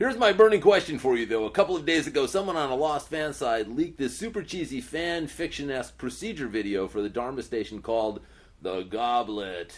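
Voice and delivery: grand radio-announcer read. Asked to read a fan's question aloud on a podcast, put-on announcer voice. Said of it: "read by [name] in his Sunday Times three announcer voice".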